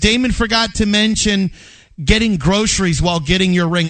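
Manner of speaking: normal talking voice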